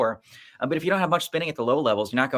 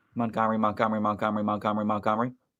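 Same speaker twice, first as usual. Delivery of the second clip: rattled off as fast as possible, rapid-fire; 2 semitones lower than usual. Taking up a challenge to say a word five times fast, very fast. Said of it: "Montgomery five times fast?".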